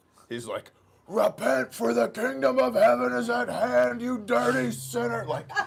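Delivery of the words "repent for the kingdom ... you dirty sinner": acted, very loud, high, shrill, ragged, raspy outburst. Retelling a companion confronting two women on the strip: imitating Bob losing it. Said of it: "Bob loses it".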